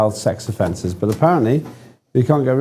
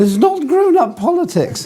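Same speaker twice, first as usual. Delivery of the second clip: mock scolding in raised, higher pitch. Imitating her scolding a co-host over politics: imitating Anne going up an octave. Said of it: "she'd go up an octave".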